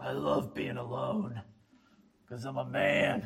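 whispery, breathy, put-on macho tough-guy voice. Voicing what many listeners would say about being alone, put-on manly voice. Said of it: "That was my best manly voice".

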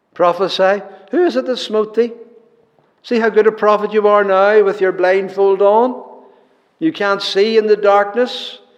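loud mocking taunt. Speaker retells how men mocked a blindfolded man, acting out a mocking taunt. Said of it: "but mockingly".

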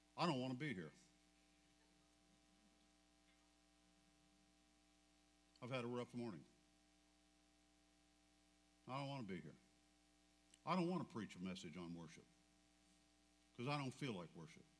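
soft, slightly anguished, with a bit of angst. A preacher before the message, after a rough morning, with a little angst. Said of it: "a little bit of angst in my voice".

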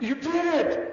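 loud, high-pitched exclamation.

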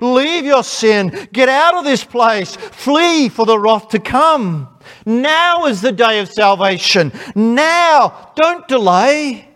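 earnest high pleading, "now" drawn out. Acting out a man working as a gospel preacher on the day of judgment, imitating a pleading voice. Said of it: "comes with his pleading voice".

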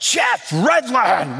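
put-on loud calling voice. Retelling how Doctor Pope greeted him at the airport: imitating a loud greeting. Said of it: "really loud".

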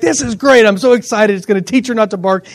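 plain

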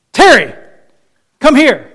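loud, swooping, commanding call with no softness. Speaker imitating how she summons him, mimicking a commanding tone. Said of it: "the tone of voice that tells, it's an imperative".

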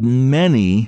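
"many" said with strong stress. Speaker reading a Bible passage aloud and commenting on it, stressing 'many'. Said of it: "I emphasize the word".

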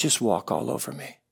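gentle, soft, humble murmuring voice. Retelling a man's humble words to an angry brother: imitating a soft voice. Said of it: "in a soft voice and he said".

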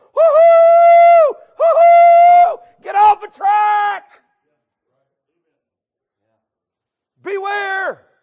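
very loud, very slow, drawn-out preacher holler. Describing people on the tracks, acting out the preacher screaming and hollering at them. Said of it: "the preacher screaming and hollering".

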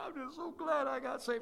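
put-on high, tearful sobbing through the words. Describing people who cry when they get saved, imitating someone crying. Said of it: "they just cry".

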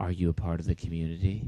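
low, hushed, eerie, unsettling creepy voice. Mocking a church's community phrase, asking the listener: creepy voice. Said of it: "That's my creepy voice".

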